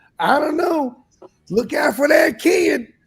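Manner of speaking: very high, deliberate, drawn-out voice. Retelling what a friend said about a player, Spencer impression. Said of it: "That's my best Spencer impression".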